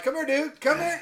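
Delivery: very high, shrill, loud hollering. Speaker recalls calling a dog who won't move: retelling a yell. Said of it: "I'm yelling at him".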